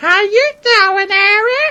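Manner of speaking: grating, shrill, very high and very loud squeal. Describing a hot girl with an annoying voice, in an annoying high-pitched voice. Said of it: "an annoying high pitched voice".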